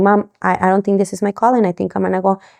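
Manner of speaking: ordinary delivery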